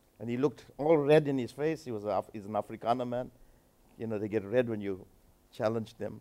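ordinary delivery

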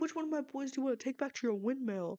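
put-on condescending New York accent, laid on thick. Retelling a man's question to a woman: mock-condescending New Yorker voice. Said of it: "he asked it in the most literally condescending way, in the most New Yorker voice ever".

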